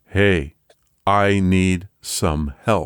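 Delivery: flat, toneless voice. Narrator voicing an unseen voice calling from the basement, monotone voice. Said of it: "a monotone voice saying".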